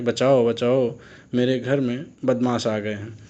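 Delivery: normal talking voice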